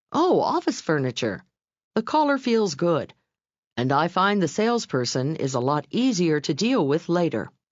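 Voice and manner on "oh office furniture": warm, friendly tone. Narrator reads a staffer's reply to a caller as Steve describes it, warmly. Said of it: "says warmly".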